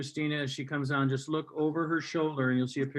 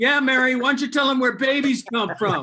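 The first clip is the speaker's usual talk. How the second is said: mock drunk voice, very high, loud and shrill; 10 semitones higher, 11 dB louder than usual. In a joke about Mary's child asking where babies come from: drunk Joseph voice. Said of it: "you hear the drunk voice of Joseph saying".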